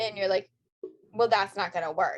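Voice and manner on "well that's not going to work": mimicked snippy reply tone. Retelling what the other speaker said about the Uber: imitating a snippy reply. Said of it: "you immediately got snippy with me".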